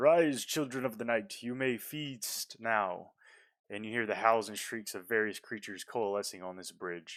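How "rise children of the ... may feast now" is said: slow, booming, resonant voice that shakes bones. Voicing the pale man summoning creatures, booming voice that reverberates through bones. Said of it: "in a voice that you hear, or that reverberates through your very bones".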